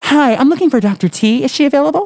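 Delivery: very high switched-register code-switching voice. Asked about having a code-switching voice, speaker demonstrates a code-switching voice. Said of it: "Do you have a code-switching voice?".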